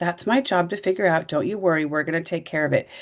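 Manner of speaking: smug, self-satisfied, self-assured tone. Retelling what the manager said in a team huddle: imitating a smug manager. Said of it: "the manager kind of smugly says".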